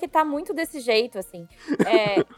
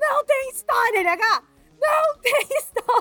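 put-on slow, high, drawn-out hollered telling-off; 8 semitones higher than usual. Recalling the previous podcast episode, re-enacting yelling at LH. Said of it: "eu dava uns berros com o LH".

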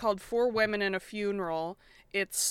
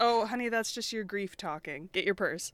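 mock condescending, patronizing dismissive tone. Recapping a scene where one friend answers another's objection, mock-condescending brush-off. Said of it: "Sam condescendingly brushes off Carrie's grief".

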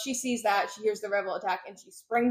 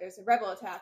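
ordinary talk, nothing marked

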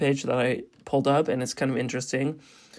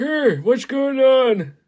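put-on loud, very high, raised old-man voice; 11 semitones higher, 7 dB louder than usual. Telling a co-host his old-man characters all sound alike, in Jake old-man voice. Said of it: "Whenever you do an old man".

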